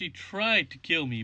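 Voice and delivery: stress on tried. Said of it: "emphasis on the word try".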